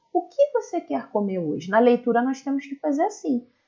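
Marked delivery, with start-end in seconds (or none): 0.2-1.7 pitch rising on the word hoje. Showing how to read a question aloud, with questioning intonation. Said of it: "Repare na minha entonação na hora de falar".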